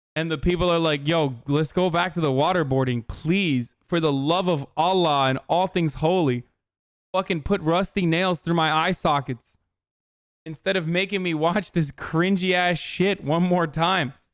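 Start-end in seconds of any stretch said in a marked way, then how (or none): none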